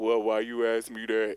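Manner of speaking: very loud, booming, deep put-on bass voice. Retelling asking her if she was transitioning, the speaker quotes her answer: imitating a deep voice. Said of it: "In a deep ass".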